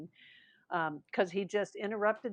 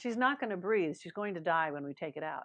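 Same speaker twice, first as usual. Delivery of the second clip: ordinary talk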